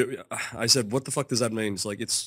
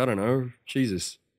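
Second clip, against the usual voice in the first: ordinary talk, nothing marked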